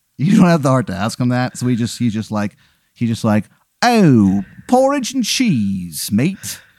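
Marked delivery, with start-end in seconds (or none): 3.8-6.6 high, terrible fake English accent. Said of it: "it's a very bad English accent".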